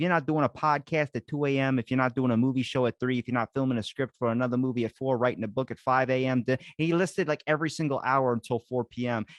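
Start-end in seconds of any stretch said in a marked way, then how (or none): 0.0-6.4 put-on Philly accent. Quoting Jamie Kennedy from an interview: Jamie Kennedy Philly accent. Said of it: "this is how he said it in his Philly accent".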